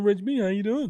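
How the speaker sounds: very high cartoon voice. Repeating an earlier greeting to the co-host: Mr. Mackey voice. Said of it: "With Mister Mackey voice".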